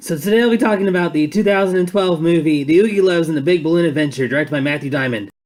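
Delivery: very loud, very fast, rattled-off breakneck delivery. Reviewer opening a review of a movie: said super fast. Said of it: "I said that super fast".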